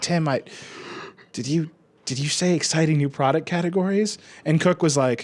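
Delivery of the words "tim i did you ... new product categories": put-on quivering, eager voice. Retelling a question asked in a call's Q and A: imitating a quivering voice. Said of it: "the quiver in his voice".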